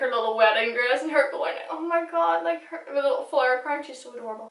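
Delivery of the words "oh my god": high, play-acted, weepy, tearful crying voice. Retelling a car scene where Waverley cries in her wedding dress: imitating Waverley crying. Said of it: "Waverley's crying in".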